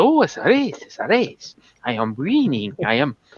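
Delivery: put-on thick semi-Italian accent with swooping pitch. Describing a film role, the speaker quotes the Italian guy: Rowan Atkinson's thick semi-Italian accent. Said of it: "doing this really thick, weird, uh, semi-Italian accent".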